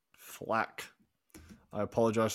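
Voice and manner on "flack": terrible put-on Scottish accent, whispered. Picking a Sheffield United player, saying his name in terrible Scottish accent. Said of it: "that terrible Scottish accent".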